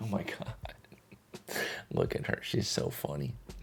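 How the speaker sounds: soft, hushed whisper.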